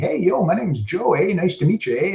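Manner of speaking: put-on thick, laid-on Canadian accent, pitched high. Retelling how a guy on the team introduced himself, imitating Joe's super Canadian accent. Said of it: "like super Canadian accent".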